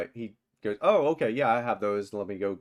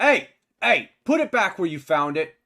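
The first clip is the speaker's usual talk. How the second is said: yelling, higher and louder; 9 semitones higher, 7 dB louder than usual. Voicing a shopkeeper shouting at a player from behind: shouting. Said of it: "you hear a shout from behind you".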